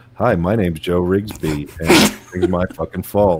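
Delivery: slow, taunting, mocking send-up. Doing a mocking impression back at another speaker: imitating Joe Rigsby. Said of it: "we're doing impressions now?".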